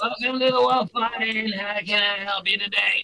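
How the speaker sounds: put-on, high-pitched goblin voice. Narrating to players, speaker voices the little goblin at the counter: goblin voice. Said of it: "I hear the goblin voice".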